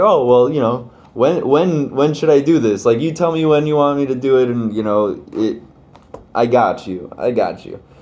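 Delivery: playfully cheeky, teasing, offhand tone. Retelling a reply about when to pray: imitating a cheeky tone. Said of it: "kind of in a cheeky kind of way".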